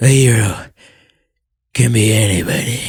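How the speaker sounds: put-on exhausted, breathy, out-of-breath voice. Speaker mimics a hero hopping out of his vehicle, imitating an exhausted, breathy voice. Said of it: "just sounds exhausted, like out of breath".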